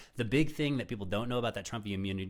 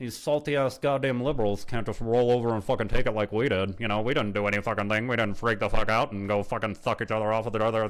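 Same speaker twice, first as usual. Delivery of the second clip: loud, smug, gloating mock voice. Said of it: "I can do that fucking voice all day".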